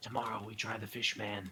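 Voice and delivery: soft, hushed half-whisper. Leaning over to half-whisper a remark to Jack: half-whispering. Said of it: "lean over and whisper to Jack".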